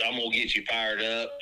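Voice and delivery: ordinary talk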